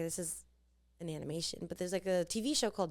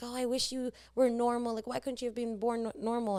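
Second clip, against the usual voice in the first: screaming, high and pitched-up; 5 semitones higher than usual. Retelling a sitcom scene where Carly yells at her brother: imitating a scream. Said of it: "she screams at him, like".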